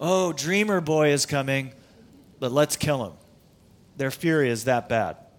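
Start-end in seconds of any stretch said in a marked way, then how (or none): 0.0-3.1 mock sarcastic, jeering tone. Retelling the story, acting out what they say about the dreamer, mock-sarcastic. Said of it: "And so they sarcastically say".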